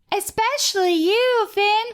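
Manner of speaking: very high-pitched cartoon princess voice. Asked to impersonate a character from the episode, doing Hot Dog Princess voice. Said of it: "I'm going to do Hot Dog Princess".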